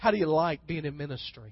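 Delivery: pointed, insinuating tone with an undertone. Retelling friends asking about ministry, imitating a pointed tone. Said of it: "said it with kind of a tone in their voice".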